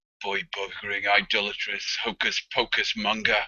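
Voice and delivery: low mutter under the breath, to himself. Looking over at the priest, a player's character mutters under his breath. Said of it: "mutters under his breath".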